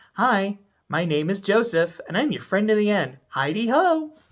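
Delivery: voice like a pull-string talking doll. Describing a show's doll scenes, the speaker performs the doll's line in a Chucky doll voice. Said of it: "and then doing the doll voice".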